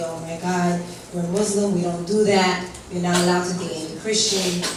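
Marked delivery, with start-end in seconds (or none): none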